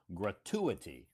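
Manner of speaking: gratuity, stress on second syllable tu. Teaching how to pronounce a word, saying gratuity with stress on the second syllable. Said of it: "actually the emphasis is on the second syllable".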